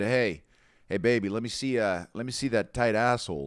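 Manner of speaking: put-on shady, tipsy man voice. Asking about what Danny Mullen might have said: imitating a shady, tipsy Danny Mullen. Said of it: "had Danny Mullen been a little shady, had he had a couple drinks and said".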